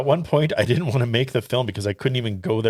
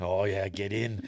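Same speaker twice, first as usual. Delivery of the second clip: male voice, slow, drawn-out Cockney accent; 2 semitones lower, 9 dB quieter than usual. Joking about a film's odd foreign title, picturing the speaker: cockney accent. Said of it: "a Cockney guy".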